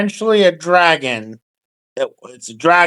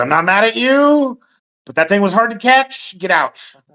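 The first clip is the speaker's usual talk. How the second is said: irritated half orc voice, higher pitch; 5 semitones higher than usual. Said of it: "He goes".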